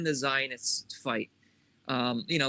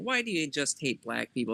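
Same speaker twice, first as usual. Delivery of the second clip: mock, loaded, sneering sarcastic tone. Retelling what someone said like a smart ass: imitating a sarcastic remark. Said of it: "sarcastically saying".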